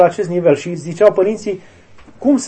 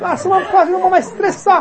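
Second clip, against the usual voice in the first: imitated irritable snapping, much higher; 12 semitones higher than usual. Quoting a man who was always irritable, retelling an irritated outburst. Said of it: "era tot timpul nervos".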